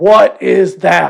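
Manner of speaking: put-on roaring yell. Retelling a man's reaction on seeing the speaker's injury, retelling a roaring yell. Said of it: "Like in like roaring manner".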